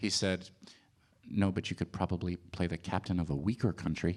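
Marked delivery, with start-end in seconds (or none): 1.3-4.2 quietly muttered under his breath, much lower. Retelling what Jesse Eisenberg said the first time you met him, quietly, under his breath. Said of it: "just says quietly under his breath".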